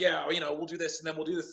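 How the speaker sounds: put-on enthusiastic Southern American accent. Retelling how Braun Strowman talked about the match: Braun Strowman Southern accent. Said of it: "He got this, like, Southern accent".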